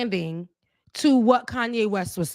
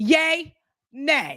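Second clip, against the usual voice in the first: mock-tough voice, growing tougher each time; 3 semitones higher than usual. Retelling how he said yay and nay, acting out growing toughness with each one. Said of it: "getting like tougher with each one".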